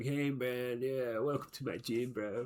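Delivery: mellow, slow, laid-back stoner dude drawl. Imitating a game's first gym leader greeting the player: imitating a stoner gym leader. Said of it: "he's a big stoner".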